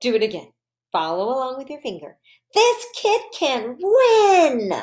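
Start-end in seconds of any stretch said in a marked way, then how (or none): 2.5-4.7 very high, slow, swooping, eager excited voice. Speaker reading aloud for a listener following along with a finger, in an excited voice. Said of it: "And my excited voice".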